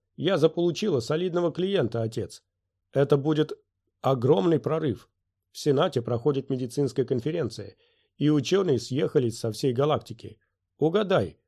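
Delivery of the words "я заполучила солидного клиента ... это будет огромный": ordinary delivery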